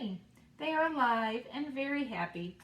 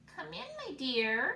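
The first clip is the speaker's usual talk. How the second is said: put-on squeaky, high-pitched wolf voice; 6 semitones higher than usual. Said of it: "calls the wolf in a squeaky voice".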